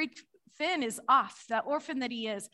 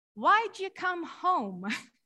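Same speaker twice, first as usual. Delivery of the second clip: put-on high, sweet little-girl voice; 5 semitones higher than usual. Mother retelling her daughter's question from the back seat after preschool, sweet little girl voice. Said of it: "I hear her sweet little voice".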